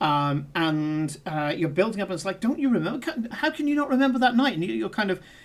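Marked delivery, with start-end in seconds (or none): 2.4-4.5 enthusing, coaxing, high and eager urging. Voicing a character willing someone to remember: enthusing. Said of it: "you're enthusing".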